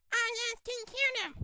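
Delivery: ordinary talk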